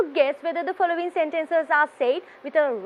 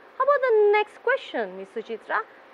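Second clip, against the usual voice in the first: plain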